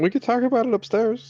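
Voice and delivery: high voice breaking all the way through. Playing a character keeping up appearances for the guards: voice cracking, high-pitched. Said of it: "voice cracking high pitched".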